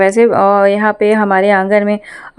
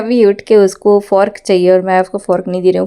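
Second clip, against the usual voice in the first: ordinary talk, nothing marked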